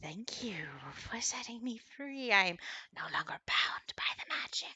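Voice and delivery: very hushed, low, crackling whispery voice. A freed creature speaks to the listener, low crackling whispery voice. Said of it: "speaks to you in this low, kind of whispery voice that crackles".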